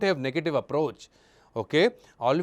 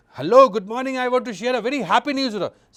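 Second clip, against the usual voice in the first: euphoric, high, joyful, overjoyed voice; 8 semitones higher, 4 dB louder than usual. Demonstrating how to sound when sharing happy news, in a euphoric happy voice.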